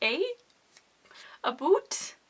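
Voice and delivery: thick, over-the-top Canadian accent, sing-song. Mentioning Canada Day and being Canadian in a talky video: exaggerated Canadian accent. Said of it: "Do I sound Canadian yet?".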